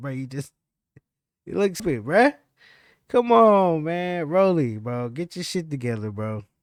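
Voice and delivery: put-on loud, teasing, laughing delivery. Retelling how Ryan taunted someone: imitating Ryan laughing while talking.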